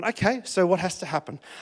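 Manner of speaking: very calm, soft, unruffled voice. Retelling how Beck reacted to the wrecked birthday: imitating Beck speaking calmly. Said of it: "very calmly walked up and gone".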